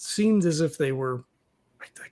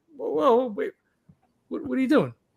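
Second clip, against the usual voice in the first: high pitched, startled, taken-aback surprise; 7 semitones higher than usual. Voicing a character as another starts doing his thing: surprised. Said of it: "is kinda surprised".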